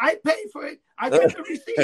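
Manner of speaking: very high, shrill, loud screamed cries. Retelling how a running customer screamed in the store: imitating someone screaming. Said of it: "he's screaming in the store".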